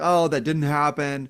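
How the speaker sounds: ordinary talk, nothing marked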